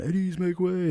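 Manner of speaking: loud yelling pitched very high. Drill sergeant describing privates at the PX, imitating privates yelling. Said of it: "they're all yelling".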